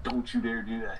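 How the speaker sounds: normal talking voice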